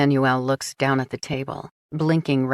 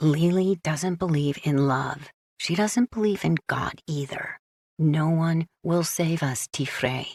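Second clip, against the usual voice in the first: quiet, hushed, secretive, confiding undertone; 3 dB quieter than usual. Reading a scene where a character glances around for eavesdroppers: half-whispering quietly. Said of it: "then whispers quietly".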